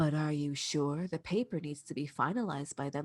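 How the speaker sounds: mock very low, soft, gentle, unhurried, even voice. Retelling what a lizard man said, imitating his calm voice. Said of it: "such a calm voice".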